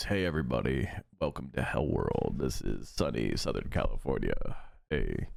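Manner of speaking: very low, deepened voice, register dropped. Reacting to another speaker, imitating his lowered voice. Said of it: "he's also lowering the register of his voice".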